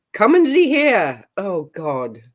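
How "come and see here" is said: put-on German accent, pitched up. Quoting Herman, the acting chief on watch, in Herman's German accent. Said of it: "I even did the voice, didn't I? I did the accent".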